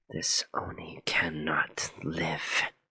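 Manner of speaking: dark, ominous tone full of foreboding. A player's character looks up at a companion, foreboding. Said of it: "hang my head low... foreboding sense".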